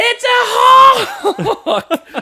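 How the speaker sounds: put-on very high, freaked-out, flipping-out yell. Retelling how a woman reacted near a security camera, imitating a freaked-out shout. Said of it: "Flipping out".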